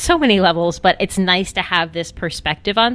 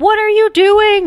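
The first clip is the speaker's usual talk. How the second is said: very high yell of pure surprise; 6 dB louder than usual. Retelling turning around to find him down on one knee, retelling a surprised yell. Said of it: "I literally remember yelling like".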